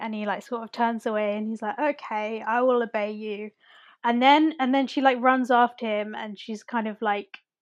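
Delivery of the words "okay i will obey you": mock mournful, downcast, slow, sad period-drama delivery. Retelling a film scene where Mister Knightley turns away: sad Mister Knightley voice. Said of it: "sad Mister Knightley".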